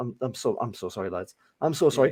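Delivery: soft, sheepish, hangdog, put-on contrite tone. Acting out a goalscorer apologising to away fans: mock apologetic, puppy eyes. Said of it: "with your puppy eyes and go".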